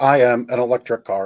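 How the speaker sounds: robotic voice. Joking that an electric car might announce itself: robot voice. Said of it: "in a robot voice".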